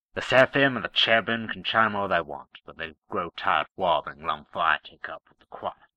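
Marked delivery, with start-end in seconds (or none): none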